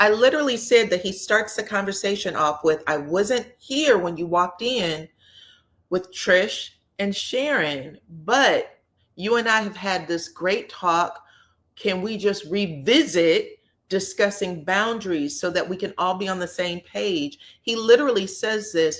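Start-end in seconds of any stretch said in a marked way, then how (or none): none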